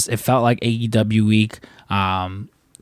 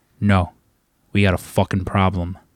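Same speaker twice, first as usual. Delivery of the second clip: put-on tough, menacing wrestler voice, lower; 3 semitones lower than usual. Retelling Wardlow confronting Michael in the store: imitating Wardlow in full Wardlow mode. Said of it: "gets into full Wardlow mode".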